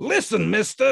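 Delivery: very high, menacing, threatening, loud and rough. An angry man steps forward to confront Grand, threatening tone. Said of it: "he began in a threatening tone".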